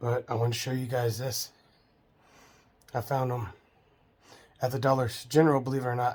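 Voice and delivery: audibly short of breath, trouble breathing. Showing a purchase just after getting out of the hospital: trouble breathing. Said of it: "Having trouble breathing".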